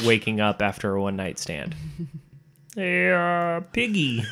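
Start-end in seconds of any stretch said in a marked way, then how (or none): 2.7-4.2 "hey" stretched out and raised in pitch. Doing a bit about Kermit waking up after a night out, as Kermit the Frog. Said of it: "this is Kermit the Frog".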